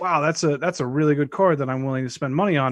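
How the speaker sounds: ordinary talk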